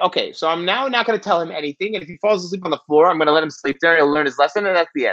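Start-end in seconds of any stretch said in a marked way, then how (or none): none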